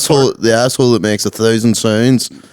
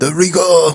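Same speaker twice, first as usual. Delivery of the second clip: put-on Japanese accent, higher; 6 semitones higher than usual. Joking about how someone might mispronounce a word: mock Japanese accent. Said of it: "without you doing a Japanese accent".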